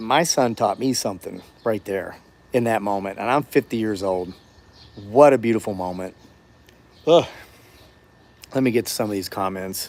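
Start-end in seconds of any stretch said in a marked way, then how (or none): 0.0-6.2 choked-up, breaking, emotional voice. Speaker talking about what his son taught him, choking up. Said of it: "I'm choking up".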